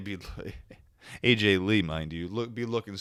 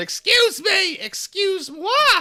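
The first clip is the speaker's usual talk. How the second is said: very high-pitched, long stretched-out piggy holler; 10 dB louder than usual. Retelling a wrestling segment, imitating the pigs yelling. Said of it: "the pigs are yelling".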